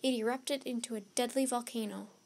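ordinary delivery

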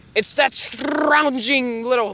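usual speaking voice

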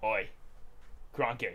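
put-on Australian accent. Would-be host of Classroom Creatures shows off an Aussie accent. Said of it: "You want to hear my Aussie accent?".

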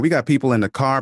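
ordinary talk

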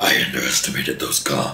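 very low, strained henchman growl voice. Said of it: "was a good little henchman voice".

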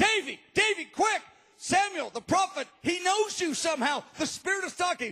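urgent calling out.

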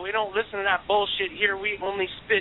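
normal talking voice

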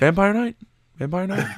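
odd, quirky high delivery. Mocking how another speaker just said the title: imitating David's odd way of saying it. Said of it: "why do you say it like that?".

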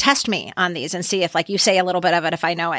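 usual speaking voice

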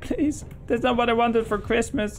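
fake crying. Commentating a game, voicing a character's reaction to its item, mock crying. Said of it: "he's crying. He's like".

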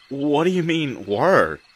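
upset, alarmed tone. Thomas questions a solemn speaker's strange claim, with distress in his voice. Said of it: "distress in his voice".

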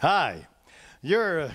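put-on smooth, suave, debonair voice. Speaker recounting greeting a familiar stranger, in a suave, debonair voice. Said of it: "in my most suave, debonair voice".

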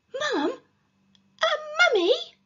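very high, loud, gasped, disbelieving. A boy reacts to being told his mum could be a mummy, gasping. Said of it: "Gasped Peter".

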